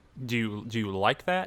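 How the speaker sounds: ordinary talk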